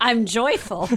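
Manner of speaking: speaking through laughter. Apologizing to the other speaker for laughing: laughing while talking. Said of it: "I'm sorry, I'm laughing".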